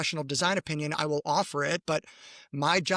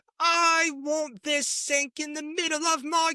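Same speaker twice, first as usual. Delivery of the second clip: British narrating voice, put-on, pitched very high; 11 semitones higher than usual. Telling how you started narrating Cat as British, speak in a put-on British accent. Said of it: "I started narrating Cat as British".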